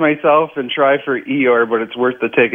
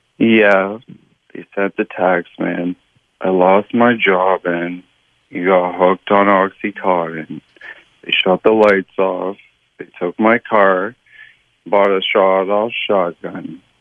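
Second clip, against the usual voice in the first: bad, gloomy donkey-style voice; 5 semitones lower than usual. For a guessing game, the speaker performs a bad Eeyore impression for a listener to guess. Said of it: "that was not a great Eeyore impression".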